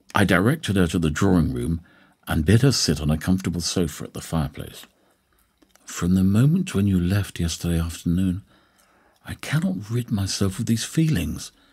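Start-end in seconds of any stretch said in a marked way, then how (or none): 5.8-11.5 nervous, anxious, hushed whisper. A woman visitor speaks to the narrator who let her in, whispering nervously. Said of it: "she whispered, wringing her hands nervously".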